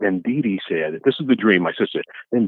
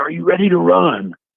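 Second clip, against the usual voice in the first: mock very high, drawn-out barked drill sergeant yell; 9 semitones higher, 4 dB louder than usual. Retelling a dream, shouting at a sister to run: retelling a drill sergeant yell. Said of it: "I yelled at her like I was a drill sergeant".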